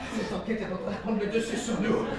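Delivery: mock detective voice, hushed, low, soft murmur.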